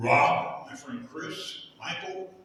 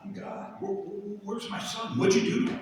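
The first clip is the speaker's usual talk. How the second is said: crying voice, pitched higher; 8 semitones higher than usual. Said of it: "he's crying and he's like".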